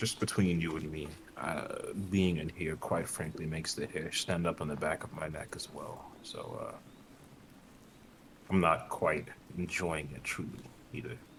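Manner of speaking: very quiet, hushed, breathy confidential whisper. Role-playing, the speaker catches up to a companion to speak privately; whispering. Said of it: "just kind of whisper and say".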